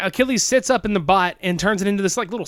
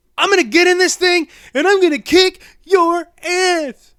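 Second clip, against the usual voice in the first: very high, shrill, loud, cocky tough-guy voice; 10 semitones higher, 6 dB louder than usual. Retelling a movie character's threat from the robot: imitating the character's threat. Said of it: "that's about what he sounded like".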